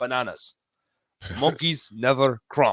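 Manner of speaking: put-on slight, light Japanese accent on English. Retelling a pitcher's answer about cramping: imitating a japanese accent. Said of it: "he's got a little bit of an accent".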